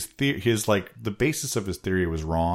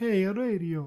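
put-on Italian accent, much higher; 13 semitones higher than usual. Acting out a suave Italian guy announcing radio, in a Mario voice. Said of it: "He sounded like Mario".

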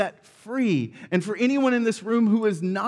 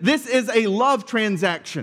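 ordinary talk

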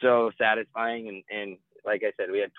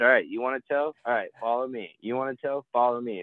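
mock camp counselor voice, leading and calling. Retelling how they led people who wanted a tow: imitating own camp counselor manner. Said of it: "I literally would just camp counselor".

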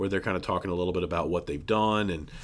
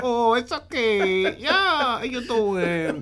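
put-on very high little old lady; 4 dB louder than usual. Describing how a character's voice sounded, little old spanish lady voice. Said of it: "It sounded like a little old Spanish lady".

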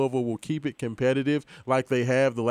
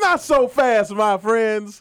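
loud, high-pitched, slow, showy voice; 9 semitones higher, 7 dB louder than usual. Making a game pick after another speaker: Lee Corso voice. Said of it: "in my best Lee Corso voice".

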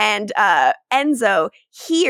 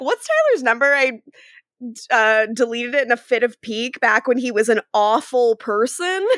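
plain

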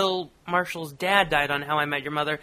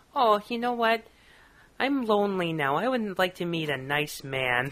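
woman's upper-Midwest Minnesota lilt; 3 semitones higher than usual. Retelling what a woman from Minnesota said, in a Minnesota accent. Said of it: "Minnesota woman who goes".

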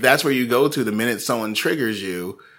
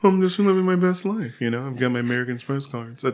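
put-on, posh, lavish, moneyed rich-person voice; 3 semitones higher than usual. Imitating how rich people sound, in a rich-person voice. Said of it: "I don't know why rich people sound like that".

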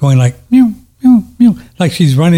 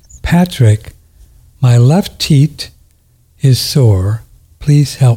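sweet little cartoon voice; 2 semitones lower than usual. Retelling what a voice said to him in a dream, in a sweet little Walt Disney voice. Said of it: "in a very sweet little voice".

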